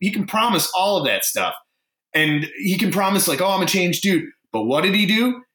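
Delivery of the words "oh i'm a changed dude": plain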